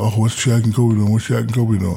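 ordinary talk, nothing marked

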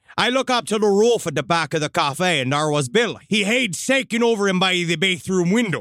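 put-on West Country English accent.

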